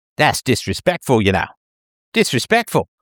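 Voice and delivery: rough put-on New Zealand reporter accent. Recounting a reporter's reaction to the posted videos, in a mock New Zealand reporter accent. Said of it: "I can't do much of a New Zealand reporter's accent".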